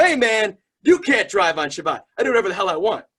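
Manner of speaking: brash, loud, high-pitched shout. Retelling a reply to a five-year-old at a Shabbat visit: imitating own past yelling. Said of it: "Why are you yelling at a five-year-old?".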